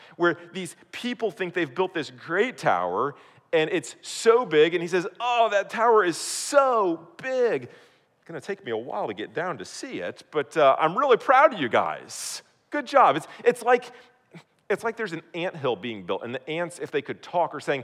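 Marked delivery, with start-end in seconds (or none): 5.2-13.2 slow, sing-song, swooping put-on sarcastic praise. Acting out a response to the tower builders: sarcastic mock praise. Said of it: "there's a bit of sarcasm here".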